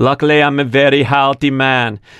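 put-on thick Austrian accent. Speaker quoting an interview answer from Arnold: Arnold accent. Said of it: "Should I try that in the Arnold accent?".

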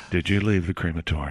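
very low, hushed half-whisper. Acting out coming up to Josh with a question, in a hushed voice. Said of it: "in a hushed voice and go".

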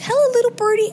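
put-on sweet, very high, cooing baby voice. Retelling how someone talked to a bird: baby voice. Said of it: "And a baby voice to it".

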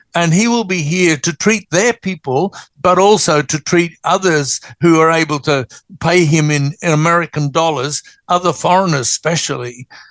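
ordinary talk, nothing marked

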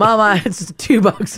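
ordinary talk, nothing marked

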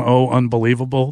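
ordinary talk

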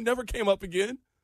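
ordinary delivery

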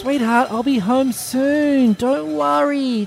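put-on baby talk, very high, soon drawn out. Speaker answers their girlfriend on the phone while others tease them, in a high babyish voice. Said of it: "You're doing it right now".

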